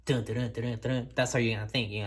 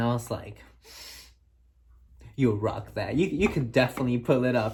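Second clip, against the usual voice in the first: ordinary talk, nothing marked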